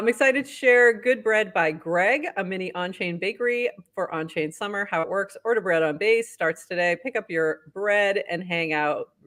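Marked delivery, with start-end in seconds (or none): none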